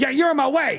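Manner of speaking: put-on, very high, shrill, high-pitched yell. A lady confronts the speaker at boarding spot B one, imitating a woman yelling. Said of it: "she starts yelling at me".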